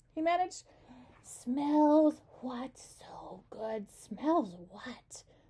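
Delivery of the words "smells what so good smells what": very slow, drawn-out, hissing cockroach voice. Reading a cockroach's reply to Gregor, in a hissing cockroach voice. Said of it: "The voice hissed again".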